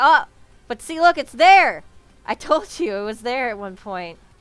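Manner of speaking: very loud, worked-up, passionate near-yell. Speaker insists to others that the proof was there all along, nearly yelling. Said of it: "Sorry, I'm trying not to yell".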